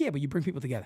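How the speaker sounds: calm, even, steady way of talking. Retelling what Hirsch said at the first club event: imitating Hirsch's calm voice. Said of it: "that's how Hirsch talks".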